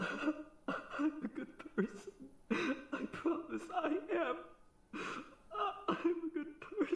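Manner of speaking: tearful pleading voice, very high and very slow. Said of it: "and then you're crying".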